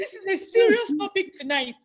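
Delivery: words broken by laughter. Asking about a serious topic and apologizing, laughing while talking. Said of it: "I'm sorry that I'm laughing".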